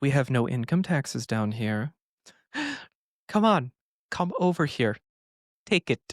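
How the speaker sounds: creepy small voice calling from below. Speaker acting out a little voice calling from the sewer, Pennywise voice from the sewer. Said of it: "that little voice coming from the sewer".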